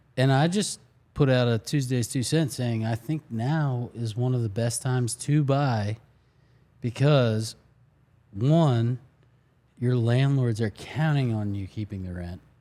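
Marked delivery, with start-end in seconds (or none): none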